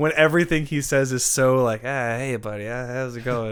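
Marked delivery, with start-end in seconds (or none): 1.8-3.5 flat monotone with no pitch lift. Imitating how Adam Sandler says everything, in a monotone Adam Sandler impression. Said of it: "It's just very monotone".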